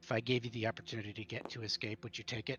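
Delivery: quiet, hushed murmur under the breath. Voicing a guard handing over food, asking about escape: quiet, under his breath. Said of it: "really quiet under his breath".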